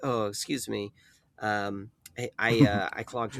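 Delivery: soft, slow, careful, discreet, halting delivery. Speaker retells what he said in a crowded place, trying to be discreet; retelling it softly. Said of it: "softly because a, a man with a quiet voice".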